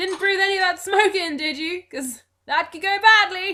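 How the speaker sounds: very high, loud shouted call. Voicing a young half-elf leaning over an airship's edge: shouting.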